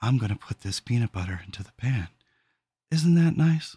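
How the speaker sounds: soft, low, soothing voice. Imitating online videos of soothing voices cooking, the speaker demos a soothing voice. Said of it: "soothing voices cooking peanut butter".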